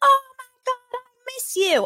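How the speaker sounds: put-on Australian accent. Retelling how a friend answered someone who called out from a car, in an imitated Australian accent. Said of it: "I had no idea he was Australian".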